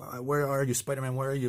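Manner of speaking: searching call, kept small, scream-like. Retelling a comic scene where a villain searches for the hero, imitating a scream. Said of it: "he's screaming".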